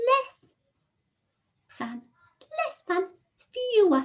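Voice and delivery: very high, tiny, squeaky little mouse voice. Modeling less than for listeners, in a tiny little mouse voice. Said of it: "we put our tiny little mouse voice on".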